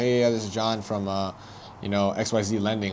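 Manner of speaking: flat, level, droning monotone voice. Imitating callers introducing themselves from a lending company: imitating a flat monotone caller. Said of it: "they're very like monotone".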